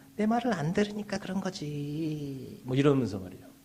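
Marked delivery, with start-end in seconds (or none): 0.2-2.6 higher, slow, soft coaxing voice. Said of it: "부드러운 목소리로".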